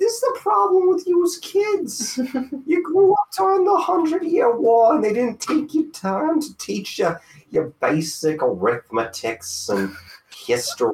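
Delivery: very high-pitched character voice. Answering another speaker who mentioned little schooling, in Old Greg voice. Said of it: "Why do you sound like old Greg now?".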